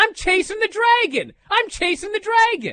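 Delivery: shrill, high scream stretched long. Telling about a woman riding a carousel all alone, retelling her screaming. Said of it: "And she's screaming".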